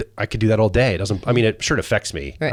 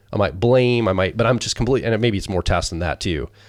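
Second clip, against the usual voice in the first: ordinary delivery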